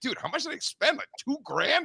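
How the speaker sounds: high whisper, muttered under the breath. Recounting an expensive store visit, the speaker retells whispering to himself. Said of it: "I'm like whispering to myself".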